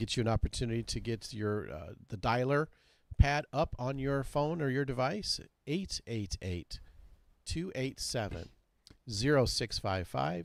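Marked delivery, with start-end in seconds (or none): 5.7-10.5 slow, deliberate, unhurried, evenly spaced. Reading out a phone number so listeners can dial it, saying it slowly. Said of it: "I'll say it slow".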